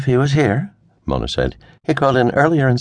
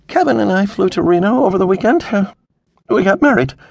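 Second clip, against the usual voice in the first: anxious, uneasy, nervous high voice; 7 semitones higher than usual. Veronica lets her father in on a secret, nervously. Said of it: "she said nervously".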